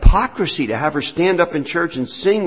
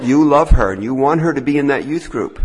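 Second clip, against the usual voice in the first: ordinary talk, nothing marked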